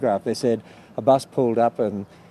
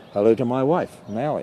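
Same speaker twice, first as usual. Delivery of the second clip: usual speaking voice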